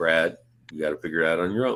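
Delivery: very flat, droning monotone, slowly rising. Retelling what Kerry told Brad from his truck, in Kerry's very monotone voice. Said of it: "very monotone".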